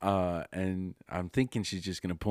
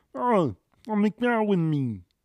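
high, loud squeaky voice; 6 dB louder than usual. Retelling how a woman sounded: slightly off Kermit the Frog voice.

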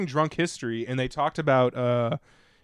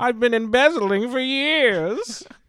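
put-on elderly dandy voice, higher and louder; 11 semitones higher, 5 dB louder than usual. Playing the Monopoly Man taunting the cop: Monopoly Man voice. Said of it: "I was like".

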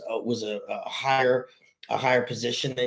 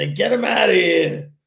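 put-on raw New York accent, higher and louder; 7 semitones higher, 8 dB louder than usual. Making fun of a guy at a dinner, raw New York accent. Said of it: "he's got that raw like New York accent".

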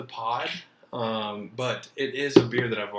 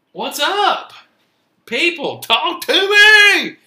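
very high, very loud excited hype shout; 13 dB louder than usual. A podcast host kicks off the show, greeting the people, excited. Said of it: "Sorry, I get a little excited".

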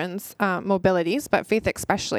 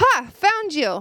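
loud, high-pitched shout; 9 semitones higher, 5 dB louder than usual. Retelling finding someone in a hide and seek game: imitating own past yell. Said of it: "So I yell".

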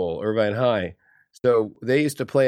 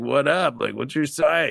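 typical creaky seventies-style flirtatious smooth delivery

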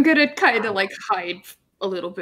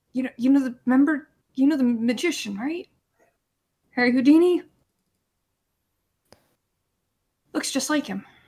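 whispering, aside. Whispering in character into Damien's ear: whispering in character. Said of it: "I'm gonna whisper into Damien's ear".

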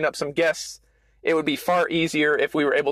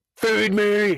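clumsy, high, growling hungry-stomach voice; 5 semitones higher than usual. Describing how a hungry stomach growls at you, bad growling-stomach impression. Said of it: "that was a bad impression".

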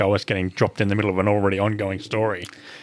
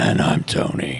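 rough, creaky, scraped-out put-on voice; 7 semitones lower than usual. A podcast co-host introduces himself at the show's start in the Witcher voice. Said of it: "he's got the Witcher voice".

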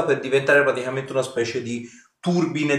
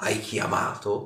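spectral, ghostly, whispered female voice; 4 semitones lower, 8 dB quieter than usual. Narrating a scene to two players, voicing a spirit in a ghostly female voice. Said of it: "senti questa voce spettrale, femminile".

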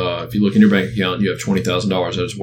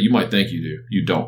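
put-on serious tone, slower. Retelling a man's reply to the speaker, acting out how he got real serious. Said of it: "he got real serious".

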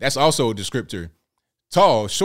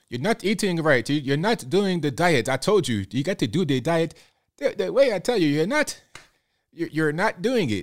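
put-on higher, loose European accent; 5 semitones higher than usual. Trying to recall the 600-pound-life doctor, speaker imitates him: European-accent doctor impression. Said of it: "The guy with the kind of European accent".

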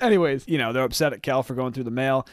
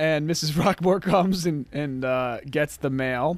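normal talking voice

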